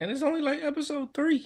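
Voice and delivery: voice jumping way up high. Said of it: "My voice got really high right there".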